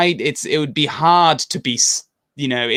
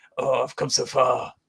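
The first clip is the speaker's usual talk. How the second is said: slow, soft, gravelly voice. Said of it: "I did the gravelly Batman voice".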